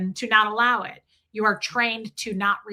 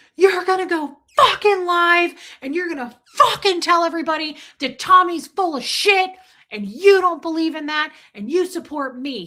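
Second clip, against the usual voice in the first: frantic, hysterical, loud, high screaming; 8 semitones higher, 6 dB louder than usual. Retelling a phone call in which the caller made demands: imitating someone screaming. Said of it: "screaming at me".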